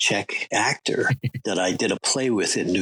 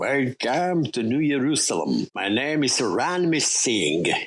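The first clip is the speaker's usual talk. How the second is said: put-on thick Czech accent; 4 semitones higher than usual. You recall a fellow actor in a play and mimic him, Jan Triska's really thick Czechoslovakian accent. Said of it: "in this really thick Czechoslovakian accent".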